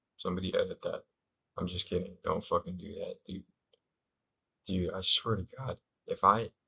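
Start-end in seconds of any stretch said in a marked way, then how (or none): 4.7-6.5 cracking, breaking voice mid-line. Joking about someone editing the clip, speaker starts a new thought, voice cracking. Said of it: "it was a cute little voice crack".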